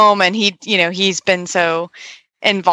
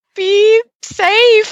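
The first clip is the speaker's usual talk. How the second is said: mock very high, crying, tearful voice; 3 dB louder than usual. Retelling a friend's words while they hugged goodbye, imitating her crying. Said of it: "And she just started crying".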